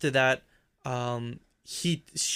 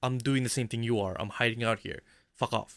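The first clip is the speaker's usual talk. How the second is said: ordinary delivery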